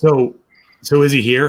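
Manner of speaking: loud, high-pitched stage whisper. Having just apologized to the staff, asking about him, whispering too loudly. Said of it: "kind of whispering too loudly".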